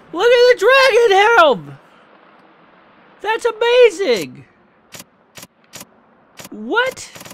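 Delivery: thrilled, very high-pitched, excited squeal.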